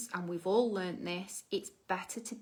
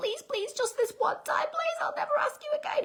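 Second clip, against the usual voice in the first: put-on very high, whiny, childish begging; 3 dB louder than usual. Acting out a child begging a parent: imitating a begging child. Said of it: "The child then begs".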